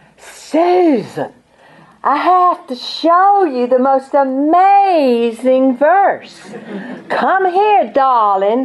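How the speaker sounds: high, drawn-out North Carolina southern drawl. Quoting an older woman calling the speaker to her room, southern north carolina drawl. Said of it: "she said in her southern North Carolina drawl".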